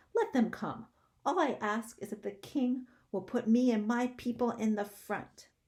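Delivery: very shrill, tiny, piercing, loud voice. Narrator reads a voice speaking from somewhere at the doctor's feet: very shrill small voice. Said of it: "said a very shrill and small voice".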